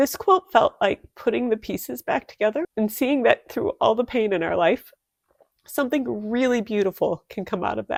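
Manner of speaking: moved, speaking from the heart. Speaker apologizes before continuing, getting a little emotional. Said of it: "I'm going to get a little emotional".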